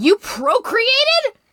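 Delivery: high, slow, incredulous scream.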